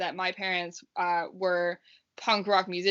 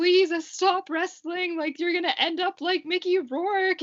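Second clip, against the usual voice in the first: put-on, very high, tearful bawling and sobbing; 11 semitones higher than usual. Retelling a tearful phone call from mom: imitating a crying mom. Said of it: "crying, like, just bawling her eyes out".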